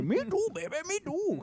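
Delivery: very high comic put-on comedy-film voice. Retelling his own words in bed, doing an Adam Sandler voice. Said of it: "Start talking like damn, uh, A-, Adam Sandler".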